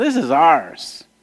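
acted smug, mocking, gloating, taunting voice. Reading a text aloud and voicing those who took the land, acting out a mocking claim. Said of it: "mockingly took the land for themselves".

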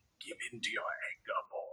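very hushed, whispered villain voice. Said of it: "If you start throwing palp quotes in there".

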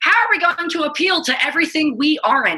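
high, mock clueless corporate guy voice.

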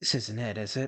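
hushed, breath-only half-whisper. A character near death half-whispers to Damien, unheard by others, half-whispering. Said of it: "he whispers to Damien".

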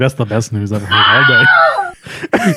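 slow, dragged-out, laughing, shouted put-on voice.

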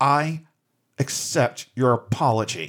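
acted speech through clenched, gritted teeth. Retelling stomping up to a guy and answering him: retelling gritted-teeth speech. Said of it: "through gritted teeth said".

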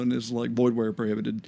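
low, flat, droning monotone. Joking that they need a lawyer's disclaimer: monotone lawyer voice. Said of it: "the lawyer to come on in the monotone voice".

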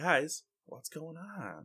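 very high-pitched voice with sad concern. Describing a teammate sounding like their old GM, the speaker imitates Bear's sad concern. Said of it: "his like sad concern".

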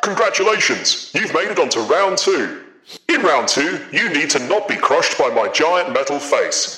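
big, resounding booming voice. Narrating to three chained players, voicing an unseen figure above them: booming voice. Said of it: "You hear a booming voice above you".

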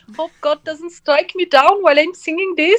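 put-on high-pitched German accent. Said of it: "the German accent".

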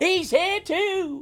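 mock, very high-pitched, thrilled, excited surprise. Redoing an impression on request, imitating someone's excited surprise. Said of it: "Can you do that impression again?".

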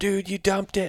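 screaming, very high. Retelling a hunt, quoting a companion after the shot: imitating someone screaming. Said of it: "and screaming".

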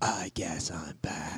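low, slow, breathy whisper.

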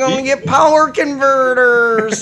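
loud, high-pitched, whiny, complaining delivery. Recalling first seeing Star Wars, the speaker mimics Luke Skywalker, mock-whiny Luke Skywalker voice. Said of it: "He just sounded like a whiny fuck".

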